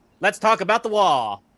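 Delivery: put-on old-time radio announcer voice. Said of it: "broadcasting from the nineteen forties".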